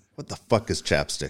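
put-on low, utterly straight, dead-serious deadpan. Retelling a Navy seal's reply to a teasing question: imitating a dead serious reply. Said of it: "Dead serious".

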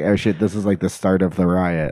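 ordinary talk, nothing marked

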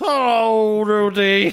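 put-on drunk-sounding voice, hello drawn way out. Greeting a TV wife by name in a joke bit: Bill Cosby voice. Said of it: "I'm doing Bill Cosby Bukowski".

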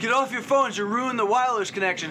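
loud, fast, rattled-off, shrill yelling. Retelling a man yelling at them while watching the game: retelling a yell. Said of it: "he's yelling at us, going".

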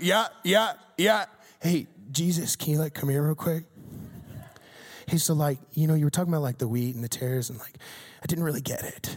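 put-on sheepish, hedging, offhand, noncommittal young-sounding tone. Imagining the disciples asking about the wheat and tares: imitating the disciples. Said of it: "And I just imagine the disciples like".

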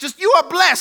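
very high, joyful, happy holler in a church style. Preacher imagining a woman in the sanctuary, imitating a woman's happy hollering. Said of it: "just happy, just hollering".

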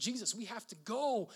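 put-on pressing, insistent, urgent tone, drawn out. Retelling a Bible story, voicing Simon urging Jesus: Simon's put-on urgent voice. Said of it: "I can almost hear the urgency in Simon's voice".

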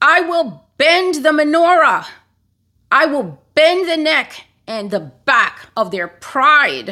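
mock furious angry shout, pitched high. Retelling what they heard, the speaker quotes God's words: retelling God's angry shout. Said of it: "I heard him shout out".

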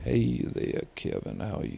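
hushed, breathy put-on Southern drawl. Trying out accents while comparing them, in a southern drawl. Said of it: "Southern draw".

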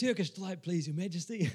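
put-on London accent, storybook style. Narrator reads a request to the Queen, in a put-on London accent. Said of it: "Best of my London accents".

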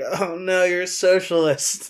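despairing drawn-out lament. Retelling someone's reply to liking Bernie and Warren: imitating someone despairing. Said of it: "kind of despairing".

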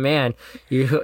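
normal talking voice

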